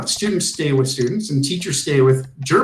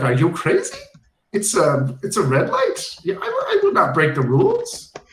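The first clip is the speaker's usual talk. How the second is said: put-on German accent, animated, high and swooping; 5 semitones higher than usual. Retelling how a driver refused to go through a red light, quoting him in a German accent. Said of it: "he said in a German accent".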